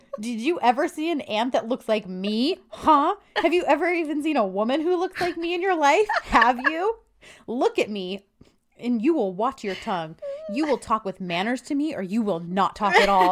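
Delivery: high, furious, flipping-out angry tirade. Retelling the auntie's angry rant at the men: imitating someone flipping out. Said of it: "And she's, like, flipping out".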